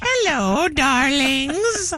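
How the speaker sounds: put-on, high-pitched elderly lady's voice. Retelling how a woman faking an elderly voice greeted people: old lady voice. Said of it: "An old lady voice".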